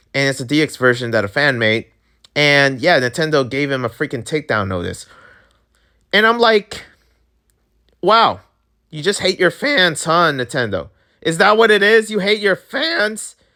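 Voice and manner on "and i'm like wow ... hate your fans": squeaky, high, cracking, angry squealing voice. Speaker ranting at Nintendo over a fan game takedown, angry squealing voice crack. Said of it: "Am I squealing?".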